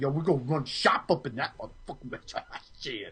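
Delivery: whispered, hushed New Jersey tough-guy accent. Showing how a tough guy from New Jersey sounds; tough guy New Jersey accent. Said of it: "let me sound like a tough guy from New Jersey".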